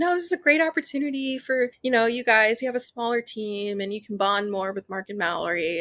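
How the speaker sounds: offhand, very dismissive, brushing-aside tone. A speaker retells what someone said to her team, imitating a super dismissive tone. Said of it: "it was just like super dismissive".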